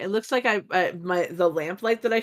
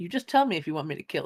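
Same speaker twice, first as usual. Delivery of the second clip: fast muttered whisper under breath; 2 semitones lower than usual. A player's character secretly tells Gremrick something in Dwarvish, whispered under breath. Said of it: "whisper to to Gremrick under my breath".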